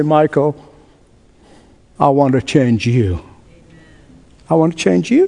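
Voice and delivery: soft, sweet, gently spoken quiet voice. The speaker retells God answering his prayer, in God's sweet, quiet voice. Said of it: "in His sweet, quiet voice".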